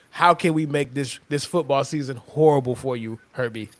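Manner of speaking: normal talking voice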